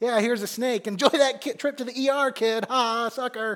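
high, jeering, taunting, mocking tone. Acting out a parent handing a child a rock: acting out a mocking parent. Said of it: "a parent who would mock their kid".

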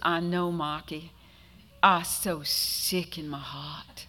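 put-on little boy voice, Boston accent, no r's. Retelling Michael as a little boy answering Marcus, in Michael's childhood Boston accent. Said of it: "had a Boston accent when he was little".

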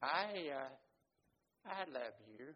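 mock very slow, faltering, hesitant delivery. Retelling the first time saying I love you: hesitant declaration of love. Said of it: "I say very hesitantly".

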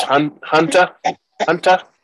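put-on strong, thick New Zealand accent, high and loud. Imitating how an actress says a name: Michelle Yang's New Zealand accent. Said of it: "her accent is very, very strong".

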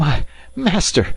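high, breathless, winded gasping. Narrator reading a man who staggered back in, unable to speak, gasping. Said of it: "gasped Passepartout".

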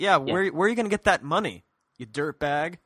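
put-on, mock-smug voice. Retelling a charity exchange, voicing the smug reply: imitating Jack Smart's smug tone. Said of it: "Jack Smart just really smugly says".

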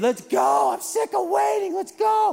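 mock yelling, shrill, raspy, very high. Retelling how his son yelled at him when he came downstairs, retelling a yell. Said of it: "He's yelling at me".

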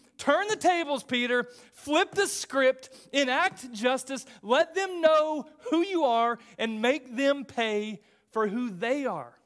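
loud, high-pitched, frustrated screaming. Speaker acting out yelling at a character on tv, retelling screaming at the tv. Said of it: "And I'm screaming at the TV".

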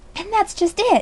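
very high, gasped-out words. Charlotte hurries over to Mrs. Fisher, gasping. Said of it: "gasped Charlotte".

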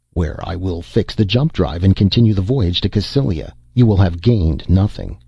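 ordinary delivery

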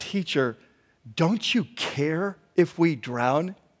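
irritated, hushed, slow and drawn-out voice. Acting out the disciples waking their teacher, with mock irritation. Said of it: "you can hear the irritation in their voice".

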